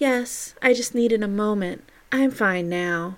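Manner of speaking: sweet movie star voice. Reading a dramatized scene, replying to a man: Marilyn Monroe sweet voice. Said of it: "In her sweet voice, she replies".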